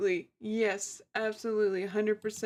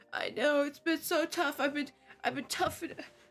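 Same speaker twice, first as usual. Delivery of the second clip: mock sobbing, higher tearful crying voice; 5 semitones higher than usual. Retelling what she said on a jail call to her parents: imitating someone crying. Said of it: "She'll start crying like".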